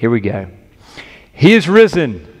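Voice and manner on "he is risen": fervent, joyful, emphatic delivery with gusto. Leading a call and response for families at home: shouting with gusto. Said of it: "shout it out like you mean it".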